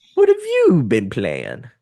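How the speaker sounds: high, swooping put-on voice with rising tone. Speaker puts a question to the other person in a UCP George voice impression. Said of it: "in my best UCP George voice".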